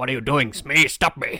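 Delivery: grand, posh English pirate voice. Asked by a co-host to redo an impression of a film scene: Captain Hook impression. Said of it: "Do your impression again".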